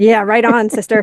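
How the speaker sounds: mock agreeing tone, like a voice in the background. Describing a video, imitating a guy in the background agreeing. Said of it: "a guy in the background that's going".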